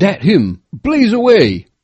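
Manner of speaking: abrupt, sudden, high, loud, drawn-out exclamation. Narrator reads Makaruru's line on spotting the hairy brute: exclaimed. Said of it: "ejaculated Makaruru".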